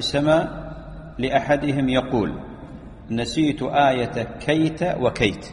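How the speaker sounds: ordinary delivery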